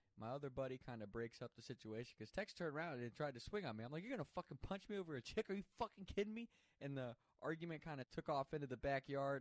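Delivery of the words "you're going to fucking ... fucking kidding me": put-on furious, disbelieving, high, angry screaming. Recounting an argument where Tex tried to punch him, retelling screaming in an argument. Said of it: "We're screaming at each other".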